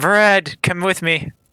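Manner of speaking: snapped, curt delivery. A woman ordering a knight to follow her, snapping. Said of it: "she snaps".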